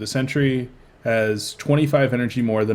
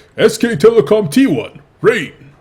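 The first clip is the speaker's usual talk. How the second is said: put-on announcer voice, much higher, louder; 10 semitones higher, 9 dB louder than usual. Showing the other speaker a practiced announcer call, GSL announcer voice. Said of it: "practicing my my GSL announcer voice".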